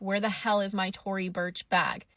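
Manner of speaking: ordinary delivery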